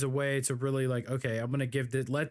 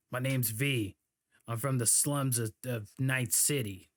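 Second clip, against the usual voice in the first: put-on deep female voice. Imitating a game character made with a deep voice: deep-voiced v voice. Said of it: "made a chick with a deep voice".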